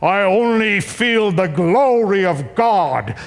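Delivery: put-on speaking with a German accent. Retelling what Reinhard replied as their plane was landing, in his German accent. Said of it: "in his German accent".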